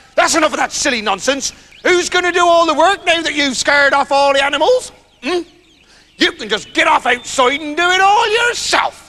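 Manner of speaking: furious, angry, high-pitched shout. Reading a story aloud, a wife scolding her husband: shouting angrily. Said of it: "the wife hit him and shouted".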